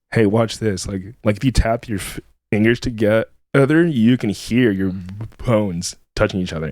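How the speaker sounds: usual speaking voice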